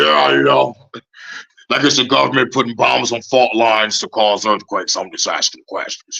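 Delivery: put-on speech muffled as if mouth is full. Retelling how a show host talks, imitating mouth full of burgers. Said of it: "talked like he got, like, a shitload of burgers in his mouth".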